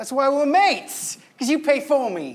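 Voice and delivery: put-on English accent. Answering the roommate who pays his rent: put-on English accent. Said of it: "with a new accent".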